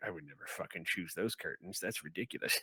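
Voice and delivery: hushed grumbling mutter under the breath, barely audible. Describing the scene as the players enter, the figure muttering to himself. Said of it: "he's just muttering to himself like".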